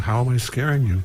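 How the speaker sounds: normal talking voice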